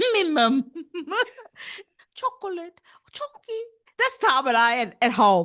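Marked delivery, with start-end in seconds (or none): 0.0-3.6 put-on small English child voice, much higher. Acting out how she and another person talked at home as small kids, small English child voice. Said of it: "That's us being small English children".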